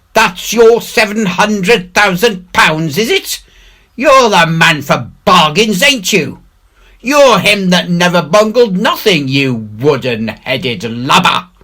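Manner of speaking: bellowing, scornful, high, furious pirate roar. Reading the story, the mutineer Merry confronts Silver, roaring as Merry. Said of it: ""Pig nuts!" repeated [name] in a scream. / says he, / roared [name]".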